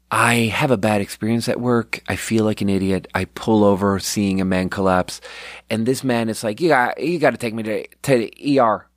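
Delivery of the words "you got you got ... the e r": put-on weird Southern accent in a man's voice. Retelling what a collapsed man said: imitating a weird southern accent. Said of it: "a weird southern accent".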